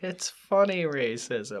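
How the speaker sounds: high, slow, heavily laid-on sarcastic tone. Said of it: "Even with the sarcastic tone that I tried to portray".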